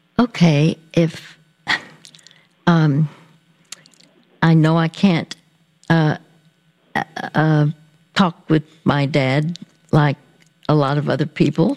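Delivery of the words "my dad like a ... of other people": normal talking voice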